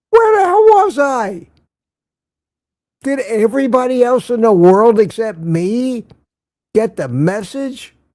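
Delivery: sarcastic mock disbelief. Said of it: "I'm being sarcastic".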